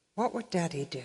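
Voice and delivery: said very quietly. Retelling the sister's question to a silent family table, said very quietly. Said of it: "my sister said very quietly".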